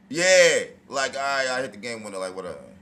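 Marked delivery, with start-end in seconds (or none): 1.2-2.2 mock flat, defeated, unexcited tone, quieter. Imitating a player who just hit a game winner: imitating an unexcited, defeated voice. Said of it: "she look like she's not excited".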